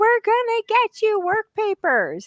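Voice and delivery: play-acted, high-pitched, shouted rallying yell. Retelling what AOC yelled to arriving migrants: imitating AOC yelling. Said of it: "And she's yelling".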